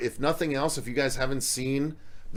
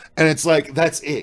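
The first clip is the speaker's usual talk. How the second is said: ordinary talk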